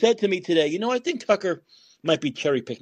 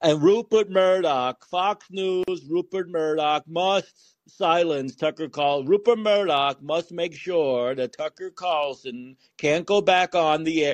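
slow, unhinged, ranting delivery. Doing an impression for the other speaker: Chuck Schumer impression. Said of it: "I'll do the impression for you".

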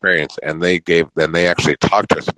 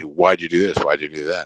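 angry, pissed-off, interrogating cross-examining tone. Acting out a dad coming home from work and questioning everyone: imitating an angry lawyer. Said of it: "this angry lawyer who's pissed off".

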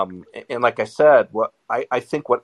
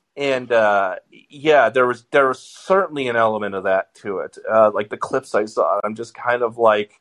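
ordinary talk

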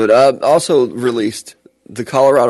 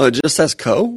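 confused, puzzled tone with rising intonation; 4 semitones higher than usual. Teasing another speaker by repeating their line as a question: imitating a questioning tone. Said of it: "it sounded like a question".

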